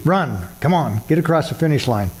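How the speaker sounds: ordinary talk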